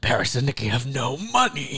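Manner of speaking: distorted, voice-filtered horror-killer voice. Imitating the show's narrator, as a Scream voice-filter impression. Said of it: "It sounded like that".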